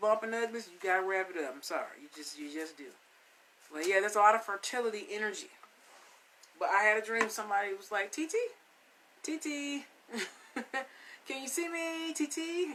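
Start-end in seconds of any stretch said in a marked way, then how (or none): 8.1-12.7 put-on high, very slow, drawn-out little baby voice. Retelling a voice heard in a dream calling out: little baby voice. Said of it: "It was like this little baby voice".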